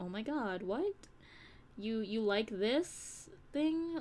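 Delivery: drawn-out, stretched surprised disbelief. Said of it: "sometimes it surprises them".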